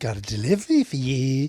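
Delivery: flamboyant, really camp put-on voice. Discussing a film, a speaker quotes a man in a little hat: imitating a really camp voice. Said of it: "He puts on this really camp voice".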